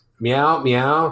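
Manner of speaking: put-on old-cartoon cat meowing voice. Explaining how a comic cat's talk sounds to its owner, cartoon cat meowing impression. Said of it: "which is my impression of a".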